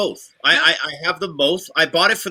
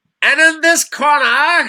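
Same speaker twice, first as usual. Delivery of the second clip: mock ring announcer voice, higher and louder; 10 semitones higher, 7 dB louder than usual. Joking about a hanging mic, mimicking a boxing announcer: put-on boxing announcer voice. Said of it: "Or a boxing announcer".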